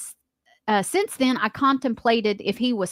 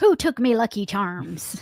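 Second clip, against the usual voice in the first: put-on stage-Irish brogue. Admitting they are terrible with accents, the speaker tries a fake Irish accent. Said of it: "Stop. We heard you".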